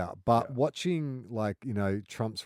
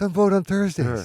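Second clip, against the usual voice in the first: very loud, high robocall voice; 11 semitones higher, 11 dB louder than usual. Joking about a robocall from Joe Biden, doing a Joe Biden impression. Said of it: "Is that your Joe Biden?".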